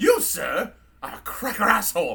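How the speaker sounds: put-on drunk robot voice with British accent. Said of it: "that's C three P O drunk".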